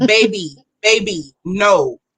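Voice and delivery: put-on chiding tone with Bolivian Spanish accent. Imitating Marie when she gets fired up, Marie's Bolivian accent. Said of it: "she gets into that accent".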